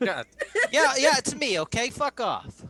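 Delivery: loud, shrill, very high tough-guy mobster voice. Answering the others in the group, the speaker talks back in a mobster voice. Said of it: "you sounded like a mobster there".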